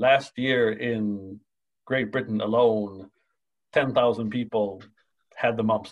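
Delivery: ordinary talk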